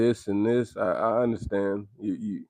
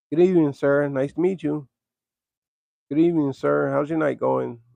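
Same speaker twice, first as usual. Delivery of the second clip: polite, pitched-up customer-service telephone manner; 5 semitones higher, 3 dB louder than usual. Showing the audience the phone voice people put on, versus their regular voice: polite phone voice. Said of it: "you got your phone voice".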